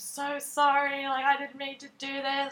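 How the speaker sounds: tearful crying voice. Retelling that night, the speaker quotes his apology: imitating someone crying. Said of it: "And he was like crying".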